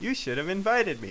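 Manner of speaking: plain reading voice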